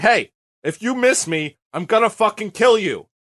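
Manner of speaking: high, drawn-out holler. Retelling a duel as a threat is yelled across: imitating Benny yelling. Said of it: "Benny yells over to him".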